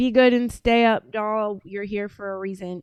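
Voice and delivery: ordinary talk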